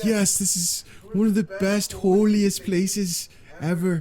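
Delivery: put-on drawn-out, high Irish accent. Retelling what people on a coliseum tour say, in an irish accent. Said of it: "What are they, Irish now?".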